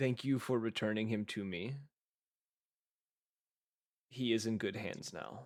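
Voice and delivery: very gentle, mild, quick voice. Narrating a huge creature speaking inside the listener's head, very gentle voice. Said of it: "you hear a very gentle voice".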